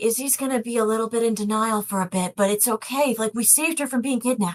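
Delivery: hushed whispering voice. Voicing a character in a game who whispers to another: whispering. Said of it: "He whispers to you".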